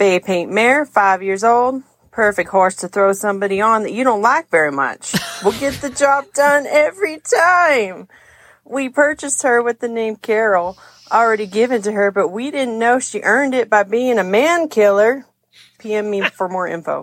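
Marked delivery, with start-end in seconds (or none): 0.0-15.2 deliberately bad, put-on Texas accent. Reading a horse-swap ad aloud in a bad texas accent. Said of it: "I'll try my best at a bad Texas accent".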